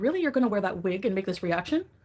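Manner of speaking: plain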